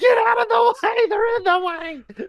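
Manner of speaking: very high-pitched screaming. Retelling a movie scene where a skier warns the boat: imitating a screaming skier. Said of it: "Just screaming".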